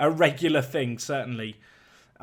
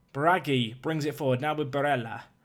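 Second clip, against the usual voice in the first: odd, fake Italian accent. Commentating a football match, calling a pass, in a weird Italian accent. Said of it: "I've put on a weird Italian accent there".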